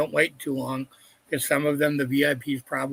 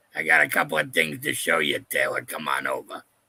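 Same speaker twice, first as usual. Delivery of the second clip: put-on old smoker voice, much lower pitch; 11 semitones lower than usual. Replying to the other speaker on the show, doing an old smoker impression. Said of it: "a Dave and Chuck impression of an old smoker".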